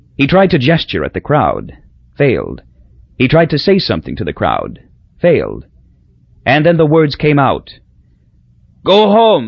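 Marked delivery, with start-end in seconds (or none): 8.9-9.5 high, strangled cry, forced out. Papa, in pain, faces the crowd and forces the words out, crying out, strangling. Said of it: "he cried, strangling".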